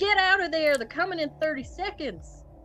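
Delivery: shrieked, very high, alarmed scream. Playing a character warning another that attackers come in thirty seconds: in-character scream. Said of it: "And I'm screaming, I'm like".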